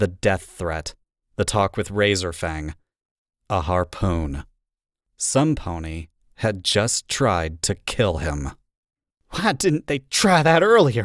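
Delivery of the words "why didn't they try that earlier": higher voice shaking with anger. Reading a story aloud, a character asks angrily: anger shaking the voice. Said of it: "anger shaking her tone".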